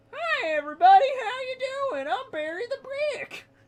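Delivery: high-pitched puppet character voice. Asked to give Barry a voice, the speaker greets everyone in a Barry the Brick voice. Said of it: "that voice impression that I did".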